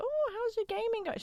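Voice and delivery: put-on terrible, very high, soft old lady voice. Speaker imitates an older lady met in the elevator, terrible older lady voice. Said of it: "That that was a terrible voice".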